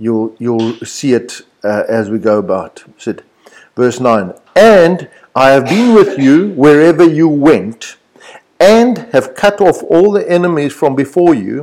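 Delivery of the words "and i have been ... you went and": and strongly emphasized, hit hard. Reading verse 9 aloud, emphasizing each and: stress on the word and. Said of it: "I'm going to emphasize the word and".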